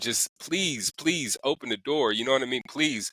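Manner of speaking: mock yelled begging, pleading shout. Recounting standing outside her window at four in the morning, retelling a begging yell. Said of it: "yelling, like begging".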